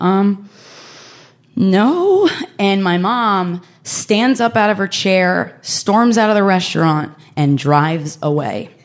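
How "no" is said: timid, very meek, small reply. Retelling answering a mother's question while looking down: imitating own very meek tone. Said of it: "in a very meek tone".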